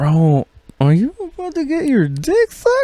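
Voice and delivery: very high, swooping, sing-song voice. Retelling a night out, imitating a voice in his head. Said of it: "I heard a voice that went".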